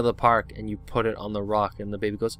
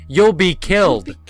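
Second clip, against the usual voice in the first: very loud, high shouted yell; 8 semitones higher, 11 dB louder than usual. Acting out a rock shaped like Dwayne Johnson's head: yelling as Dwayne Johnson. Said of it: "Dwayne The Rock's head yelling".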